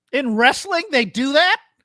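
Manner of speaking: sarcastic, feigned disbelief, high and drawn out. Reacting to a claim of exaggerated attendance: sarcastic mock surprise. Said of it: "I'm being sarcastic".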